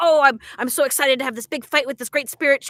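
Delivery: thrilled, eager delivery. Retelling a character's line about fighting a spirit: imitating Elsa excited. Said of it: "I took that line of just like".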